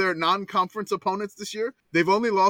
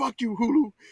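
play-acted fed-up, furious, angry outburst; 4 semitones higher than usual. Retelling what they said when the stream cut out: retelling own angry outburst.

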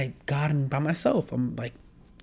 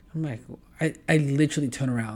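ordinary talk

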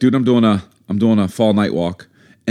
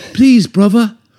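very high put-on little-girl voice with London accent; 13 semitones higher, 6 dB louder than usual. Speaker shows their london accent trick: put-on london accent, little girl. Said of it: "I think of a little British girl".

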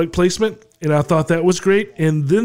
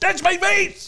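very high-pitched sitcom style character voice; 14 semitones higher than usual. Act out the actor's little cameo in his George Costanza voice. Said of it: "in his George Costanza voice".

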